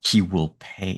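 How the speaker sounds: soft, mumbled mutter under the breath. Describing a character building a conspiracy board, muttering. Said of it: "he just mutters it like".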